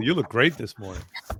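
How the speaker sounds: dripping, pointed, heavy sarcasm. Giving an example of a sarcastic compliment: heavy sarcasm. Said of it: "that level of sarcasm".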